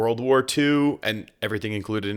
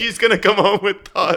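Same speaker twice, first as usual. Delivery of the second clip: imitated pleading, higher and louder; 9 semitones higher, 5 dB louder than usual. Retelling begging a friend to stop shadow boxing a doll: imitating own begging. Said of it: "I was begging you to stop".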